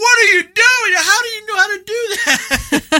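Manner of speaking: very high, incredulous yelling. Retelling playing a game with his son: imitating himself yelling. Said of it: "yelling at him".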